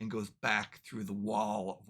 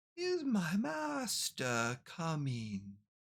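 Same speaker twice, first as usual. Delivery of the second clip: put-on hundred-year-old decrepit voice, high and swooping; 8 semitones higher than usual. Describing a scene, the cloaked figure asks whether its master is coming, decrepit voice. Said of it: "in this voice you hear this decrepit".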